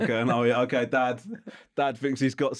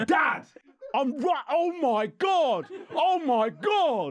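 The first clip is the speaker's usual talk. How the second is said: play-acted very high, drawn-out child's yell. Retelling gaming with the kids, who shouted at their dad: imitating kids shouting. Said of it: "they were shouting at me".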